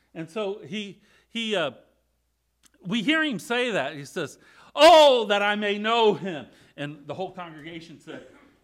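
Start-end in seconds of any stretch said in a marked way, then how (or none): 4.8-6.5 put-on very loud, slow, fervent, drawn-out passionate cry. The speaker acts out a passage for the congregation: acting out Paul's passionate cry. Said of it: "Paul says it with great passion".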